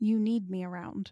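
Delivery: menacing, threatening tone. Speaker talking about surviving apocalyptic events, in a threatening tone. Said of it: "That sounded very threatening".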